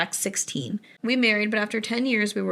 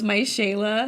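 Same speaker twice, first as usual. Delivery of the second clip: mock tearful crying wail. Retelling an actor in a custody battle: imitating an actor crying. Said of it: "he's crying, and he goes".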